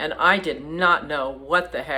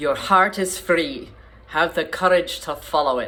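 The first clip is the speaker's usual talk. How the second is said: Scottish brogue that doesn't quite land. Quoting a father's deathbed words to his young son, in a bad Scottish brogue. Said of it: "I don't have a good Scottish brogue".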